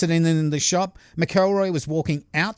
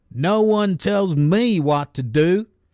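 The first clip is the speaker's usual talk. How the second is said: put-on Missouri accent, man's voice; 2 semitones higher, 3 dB louder than usual. Retelling a story, a man with a knife refuses an order, imitating McElroy's Missouri accent. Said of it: "is that the right accent for someone in Missouri?".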